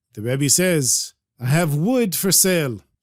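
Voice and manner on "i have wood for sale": genuine-sounding put-on Ukrainian accent. Telling a story, voicing the Rebbe offering wood: real Ukrainian accent. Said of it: "He speaks with a real Ukrainian accent".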